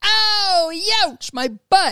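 very high, squeaky, drawn-out yelp. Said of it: "and it's Machine Gun Kelly".

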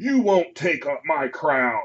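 high, menacing yelled monster voice. Narrating a game, voicing the monster as it yells out: monster yelling. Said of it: "the monster yells out".

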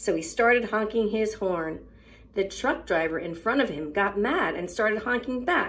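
ordinary delivery

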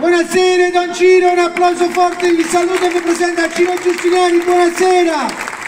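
high, loud stage announcer calling out.

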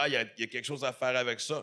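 ordinary delivery

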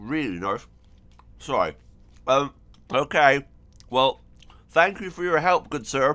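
talking while chewing food. Thanking a character for his help while eating caramel. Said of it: "I'm eating Aero caramel".

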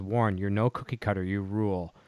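ordinary talk, nothing marked

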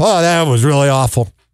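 candid, blunt offhand aside. Imitating radio people after the mic goes off: imitating a radio host off air. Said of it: "Mic goes off".

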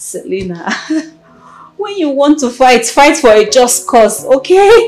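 very loud words spoken through laughter. Talking to selena about why she fought: laughing while speaking. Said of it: "I'm sorry I'm laughing".

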